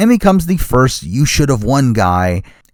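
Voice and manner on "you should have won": ordinary talk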